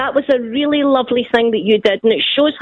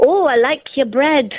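bad, put-on Northern English accent; 3 semitones higher than usual. Showing the other accent she says she can do: put-on Northern English accent. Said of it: "And Northern, which is this".

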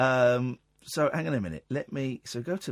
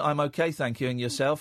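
mock, put-on flat monotone delivery. Mocking how everyone just greeted each other, imitating a monotone reply. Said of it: "Everyone's just doing this very monotone".

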